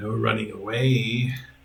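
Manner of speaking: lizardy voice with "away" drawn out. Narrating a game, a red dragonborn grappling a player, lizardy dragonborn voice. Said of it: "you hear a lizardy voice behind you say".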